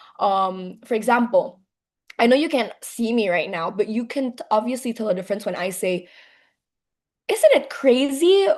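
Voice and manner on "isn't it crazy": bright, high-toned, raised exclaiming voice. Teaching listeners to hear the difference in tone, high-pitched voice. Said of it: "That's nada tinggi".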